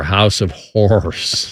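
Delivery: slow, drawn-out delivery.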